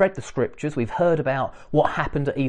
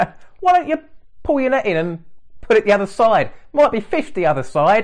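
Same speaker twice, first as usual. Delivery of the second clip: mocking, sarcastic, pitched-up delivery; 6 semitones higher, 4 dB louder than usual. Imagining the stranger on the shore mocking the fishermen: imitating sarcasm. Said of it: "The sarcasm".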